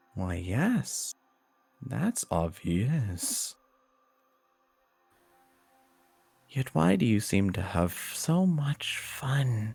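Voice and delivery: high voice morphing through many shifting, layered voices. In a narrated story, the questioning voice answers, morphing into many voices. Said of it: "the voice almost morphs into many different voices and constantly change".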